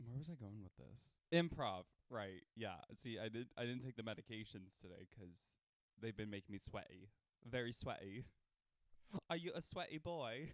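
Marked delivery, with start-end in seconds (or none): 9.3-10.5 unplaceable put-on accent, vaguely British. Doing an improv bit, unidentifiable put-on accent. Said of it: "I don't even know what that accent is".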